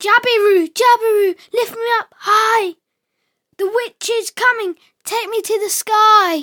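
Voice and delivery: very high, urgent cry, "sky" drawn out. A boy calls to two storks on the riverbank; crying out. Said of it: "Zico cried".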